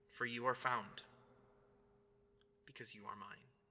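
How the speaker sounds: tender, very soft, hushed, barely a whisper. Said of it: "And he whispers to some of us".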